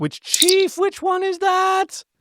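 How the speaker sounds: very high, silly, put-on voice, climbing in pitch. Planning next week's Star Trek episode, a podcast host asks in a high voice. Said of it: "I keep doing the high voice".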